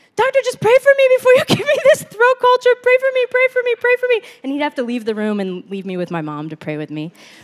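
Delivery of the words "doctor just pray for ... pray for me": mock crying, very high, loud and tearful. Retelling begging the doctor before a throat culture, retelling a crying plea. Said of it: "I would be like crying".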